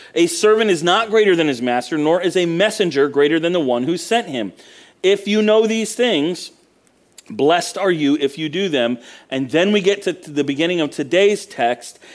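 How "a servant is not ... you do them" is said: usual speaking voice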